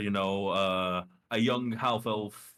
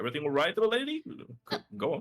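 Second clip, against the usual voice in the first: put-on old half-elf man voice, higher pitch; 6 semitones higher than usual. Voicing an old half-elf man the party bumps into: old half-elf man voice. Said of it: "an old half-elf man carrying a lute".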